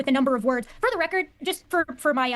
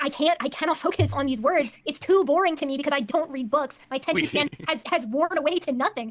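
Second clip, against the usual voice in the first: normal talking voice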